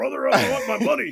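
shrill, high-pitched yell at full volume. Joking about confronting someone who owes money: Hulk Hogan voice. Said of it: "Hulk Hogan's voice".

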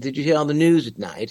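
carefully exact, precise English accent. Showing how an accent sounds in movies: exact english accent. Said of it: "you have a very, uh, an exact accent".

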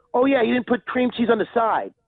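high, angry scolding. Retelling what a woman yelled after throwing a bagel, imitating someone yelling angrily. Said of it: "like yelling at me".

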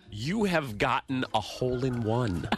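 mock, exaggerated, slow over-enunciated delivery. Imitating someone who talks to everybody like they're five, over-enunciated. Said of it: "She enunciates everything".

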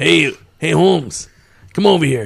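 fake street-tough gangster voice. Asked by a friend to show his gangster voice, he tries gangster voice. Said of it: "I got my gangster voice".

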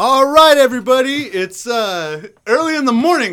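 cheerful, loud shouting. Greeting everybody early in the morning, yelling and chipper. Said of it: "That's why I'm yelling".

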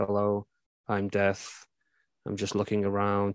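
low, flat, level, quiet monotone. Show how Ian McKellen played Death straight-faced in a film, monotone Ian McKellen as Death. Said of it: "So very monotone".

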